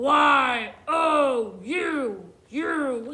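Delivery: loud, very slow scary monster voice, Y stretched. Showing learners how to spell a word like a scary monster: scary monster voice. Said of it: "Let's try it like a scary monster".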